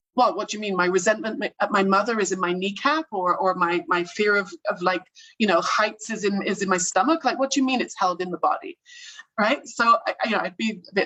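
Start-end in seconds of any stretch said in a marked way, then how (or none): none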